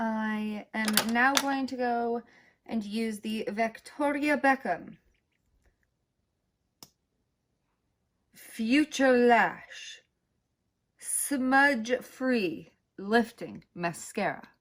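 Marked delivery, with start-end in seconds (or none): 3.5-14.4 fancy, very slow, deliberate reading. Naming a mascara during a makeup routine: said like a luxury product. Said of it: "I had to say it like that because it's, like, a luxury mascara".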